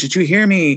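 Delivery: ordinary talk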